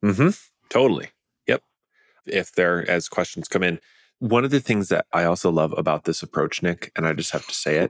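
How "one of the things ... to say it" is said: hushed half-whisper spoken close to the mic. Addressing Nick during a show discussion, half-whispering. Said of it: "You're whispering".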